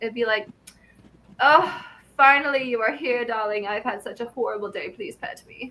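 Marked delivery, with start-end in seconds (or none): 1.4-5.7 put-on cat voice. Voicing the pet cat greeting its owner: put-on voice for the cat. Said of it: "I make a lot of voices".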